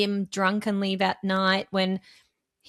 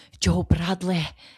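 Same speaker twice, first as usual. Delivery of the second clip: put-on Scottish accent; 4 dB louder than usual. Retelling how they answer the phone to a friend: scottish accent. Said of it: "I'm fully Scottish every time I'm answering the phone".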